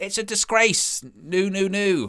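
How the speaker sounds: drawn-out deliberate voice. Imitating Josh phoning about too few likes: Josh impression. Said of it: "It's a good Josh impression that I do".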